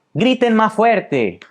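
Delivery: high, slow, drawn-out mocking delivery.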